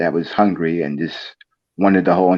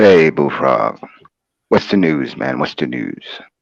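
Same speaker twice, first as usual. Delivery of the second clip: put-on deep, calm, deeper voice; 3 semitones lower than usual. Greeting someone on their entertainment channel, in a put-on deep calm voice. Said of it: "more more deeply and calmly".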